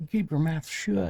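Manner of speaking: put-on heavy Southern accent spoken at a very high pitch. Acting out how Trident will pop in and yell at you, Trident voice in a deep Southern accent. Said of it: "Deep southern accent".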